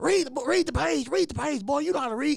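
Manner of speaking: shrill, very high, loud nagging yell. Retelling how a teacher yelled at him while he read aloud: imitating a teacher screaming. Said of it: "she's sitting there screaming".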